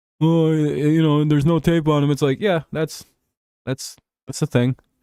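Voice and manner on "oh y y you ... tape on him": put-on derisive, jeering, mocking tone with stammering. Retelling what people say about a quarterback, imitating people mocking. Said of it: "mockingly saying shit like".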